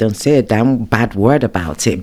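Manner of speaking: usual speaking voice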